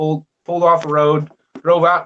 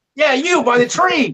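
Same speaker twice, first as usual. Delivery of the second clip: high, slow, drawn-out calling out. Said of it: "And he's like".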